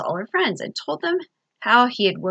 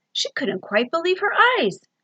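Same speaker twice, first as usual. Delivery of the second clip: ordinary delivery, nothing marked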